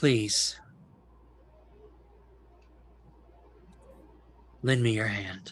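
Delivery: sincere, earnest, begging, pleading voice. A game master voices an illusory creature addressing Dalen: earnest pleading. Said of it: "with all of the earnestness and pleading".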